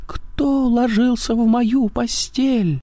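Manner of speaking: tiny, thin, piping squeaky voice, very high. Reading a story character's question aloud, in a thin squeaky voice. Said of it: "запищал тонким голосом".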